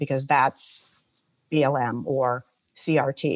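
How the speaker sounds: dry sarcastic air-quote tone, pitched low. Speaking to listeners who can't see the gesture, doing air quotes in the voice. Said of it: "Hopefully you can hear them in my voice".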